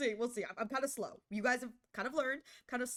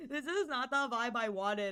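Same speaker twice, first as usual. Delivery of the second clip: sobbing, blubbering, tearful crying voice. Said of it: "I say as I cry".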